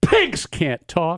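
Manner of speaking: slow, unhurried delivery.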